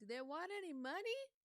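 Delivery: loud, very high-pitched voice calling out. Voicing Shalara asking the others about money: calling out loudly. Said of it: "Shalara will call out".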